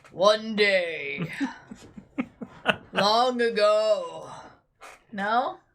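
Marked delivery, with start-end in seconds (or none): 0.2-4.3 deep, very slow movie-trailer announcer voice. Trying out a voice a partner suggested, a movie trailer voice. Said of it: "I should be like a like a a trailer voice".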